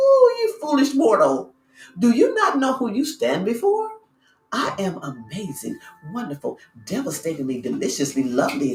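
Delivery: acted-out mocking laughter. Speaker acts out their reply to someone trying to wreak havoc: acting out laughing at someone. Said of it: "I just look at them and laugh".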